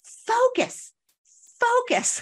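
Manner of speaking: mock, very high, swooping screaming yell. Speaker retells a mother yelling at her young son at the pool, retelling a scream. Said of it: "she was screaming at him".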